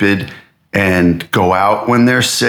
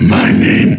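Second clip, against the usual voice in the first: put-on monster voice, louder. Speaker shows off the voices they can do, trying a Vecna voice. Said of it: "The good one is".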